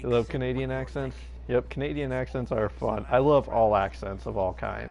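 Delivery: ordinary delivery, nothing marked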